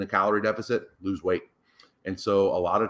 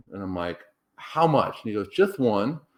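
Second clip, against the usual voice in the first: normal talking voice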